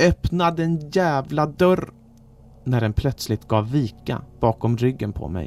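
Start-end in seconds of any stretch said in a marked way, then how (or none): 0.1-1.9 high, full-voice scream at full power. With eyes squeezed shut and back against a door, screaming at full voice. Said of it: "skrek med min rösts fulla kapacitet".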